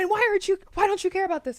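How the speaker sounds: shrill, very loud, very high scream. Retelling how an ex argued: imitating someone screaming. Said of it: "screaming and jumping up and".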